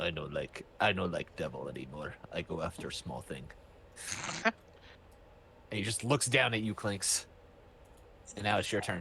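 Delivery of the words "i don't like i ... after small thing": low, soft broken-English monster voice. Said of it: "He's like".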